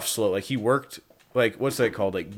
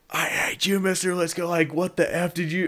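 mock kid voice, pitched-up, snapping, freaking-out rant; 7 semitones higher than usual. Retelling a classmate snapping at the teacher in class, imitating a kid freaking out. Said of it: "like freaking out".

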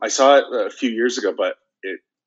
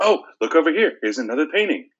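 sweet, guileless, pitched-up celebrity voice; 6 semitones higher than usual. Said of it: "very good, uh, impression, by the way, of [name]".

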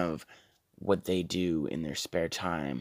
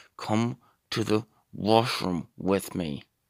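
through gritted teeth, much slower; 2 semitones higher than usual. A character pressing another character, speaking through clenched teeth. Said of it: "saying it through your teeth like that".

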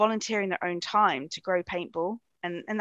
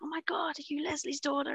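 really bad, high, put-on American accent; 8 semitones higher, 6 dB quieter than usual. Retelling what people who know her mom ask her, in a terrible American accent. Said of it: "I did a really terrible American accent then".

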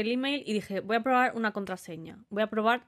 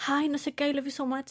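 flustered, super-nervous, high voice; 5 semitones higher than usual. Retelling a phone call from the past: imitating own past nervous talk. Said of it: "me puse súper nerviosa".

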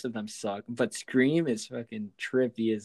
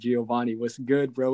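ordinary talk, nothing marked

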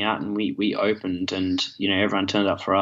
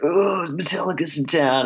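put-on high, drawn-out drunken hollering; 9 semitones higher than usual. Retelling what drunk people all around them yelled: imitating drunk people yelling. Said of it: "drunk people all around us yelling".

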